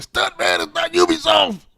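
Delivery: mock yell, pitched very high and swooping. Retelling how someone in the comments answered a listener: imitating someone yelling. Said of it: "Someone yelled at Stingray and said".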